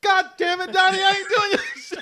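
put-on furious shout, pitched very high. Speaker retelling how a woman turned around on Donnie: imitating an angry woman. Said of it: "she was so mad".

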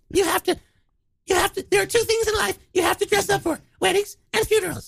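put-on voice, pitched very high. Retelling what a mother said about funeral clothes: imitating Dwayne's mother's voice. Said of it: "you didn't do her voice".

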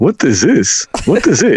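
put-on slight, light Russian accent. The speaker quotes his girlfriend asking about the jiu-jitsu he is watching, little Russian accent. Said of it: "she got the little Russian twang".

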